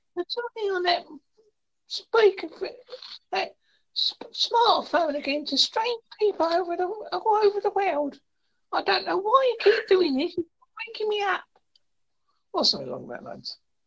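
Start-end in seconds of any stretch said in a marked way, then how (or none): 0.2-11.5 very high, grumbling, complaining dog voice. Imagining what his Jack Russell thinks of him: voicing his dog Mitzi. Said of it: "that's an impression you just did".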